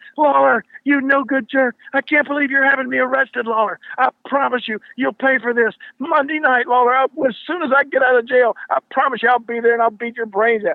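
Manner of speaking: put-on shrill screaming, pitched way up high. Retelling how police led Billy Travis out in handcuffs as he screamed at Lawler, imitate Billy Travis screaming. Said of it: "Billy Travis is screaming".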